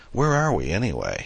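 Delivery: eager wonder, excited, eager tone. Looking out at the stars, a woman asks her companion, with an excited question. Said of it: "she asked excitedly".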